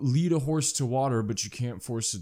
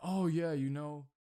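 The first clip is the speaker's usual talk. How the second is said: put-on sarcasm, higher and quieter; 4 semitones higher, 8 dB quieter than usual. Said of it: "Throw in some sarcasm in there".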